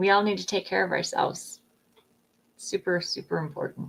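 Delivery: quiet, heartfelt, emotional, moved delivery. Sharing with the group before the next person speaks: getting emotional. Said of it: "I'm starting to kind of get emotional".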